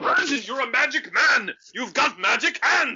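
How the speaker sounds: shouting character voice. Voicing Bjorg reacting to Brandon's punch in a game: Bjorg yelling. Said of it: "Bjorg yells".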